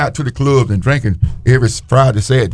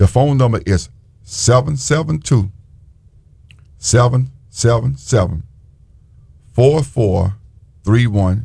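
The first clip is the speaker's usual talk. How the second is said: noticeably slower, deliberate pace. Giving out the church's phone number, saying it a little slow. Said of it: "I'm gonna say it a little slow this time".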